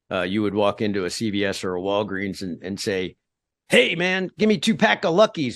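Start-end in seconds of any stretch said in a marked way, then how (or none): 3.7-5.5 mock shout, very high pitch, loud. Describing asking for cigarettes at a pharmacy years ago, shouting it out. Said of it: "you'd shout it out".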